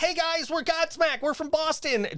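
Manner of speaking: small high voice. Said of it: "that high-pitched voice".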